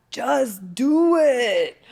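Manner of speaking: loud, high, belted-out delivery. Retelling a talk about how hard starting is: Shia LaBeouf impression. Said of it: "Did you guys like my impression of that?".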